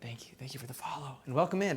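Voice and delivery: speaking in a whisper. Streamer thanking a new follower while cooking, whispering. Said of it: "I don't know why I'm whispering".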